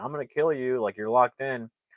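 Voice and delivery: sneering, taunting, gloating, toying menace. Retelling a movie scene where a character threatens someone: imitating a taunting threat. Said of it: "he's kinda taunting her".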